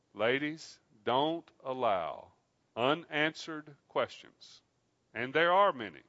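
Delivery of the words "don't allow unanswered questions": said really slowly and deliberately. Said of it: "Let me say it again".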